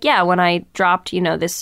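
totally flat, even, unbothered single-pitch monotone. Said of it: "said really insane things in a totally monotone voice".

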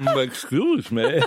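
put-on monster voice, like marbles in mouth. A speaker imitates the gentleman monster's line, voice with marbles in mouth. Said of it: "With marbles in his mouth".

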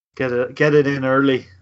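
put-on Irish brogue. Commenting on a player during a match, quoting him: Irish brogue. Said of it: "as he says in his Irish brogue".

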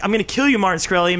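plain

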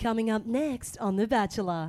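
big, dramatic tv promo announcer voice. Channel 10 voice performer showing off, The Bachelor promo voice. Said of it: "I can do the Bachelor voice though".

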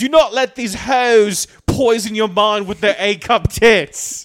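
put-on very loud, high, twenty-something British accent. Joking with friends about a TV show: twenty-year-old British accent. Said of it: "It's like a twenty-year-old British accent".

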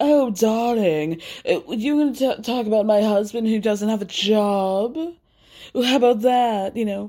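put-on English accent, lingering on job. Act out a woman mocking her opponent in an argument, imitating Meredith with an English accent. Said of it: "Meredith has an English accent".

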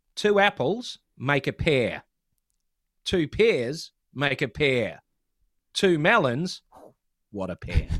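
New Zealand-accented delivery. Performing a joke that relies on a New Zealand accent. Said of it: "relies on a New Zealand accent".

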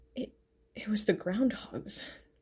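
feeble, weak, breathy, stumbling near-whisper. Narrator reading Meridian correcting Kiko, weakly. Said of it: "Meridian corrected her weakly".

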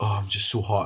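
put-on huffing and puffing put-upon moan. Retelling what Mum said downstairs: imitating Mum huffing and puffing. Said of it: "she's huffing and puffing".

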